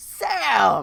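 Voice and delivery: put-on, rough, drawn-out shout at full volume. Retelling a coworker calling out across the store: imitating a yell at the top of lungs. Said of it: "at the top of his lungs, Jonathan just yell".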